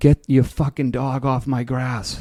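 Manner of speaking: high-pitched, slow, yelled call. Retelling how a neighbor yelled from his window: imitating a neighbor yelling. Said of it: "he yells out his window".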